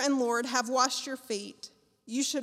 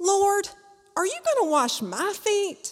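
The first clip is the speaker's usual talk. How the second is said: put-on country accent, pitched up and louder; 8 semitones higher, 7 dB louder than usual. Reading the Bible passage aloud, voicing Peter in a country accent. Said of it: "he's gonna have a country accent".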